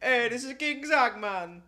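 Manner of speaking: put-on Jamaican accent. Joking back as king zach: put-on jamaican accent. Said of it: "You got some good accents".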